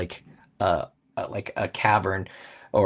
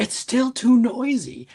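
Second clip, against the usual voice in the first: very high-pitched shouting yell; 4 dB louder than usual. Voicing a character yelling at another character: Tig yelling. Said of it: "Tig yelling".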